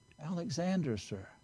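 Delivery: put-on barely audible whisper. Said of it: "with just barely a whisper".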